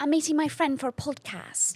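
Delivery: put-on British accent. Joking about wanting to be British: put-on British accent. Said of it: "it just sounds better".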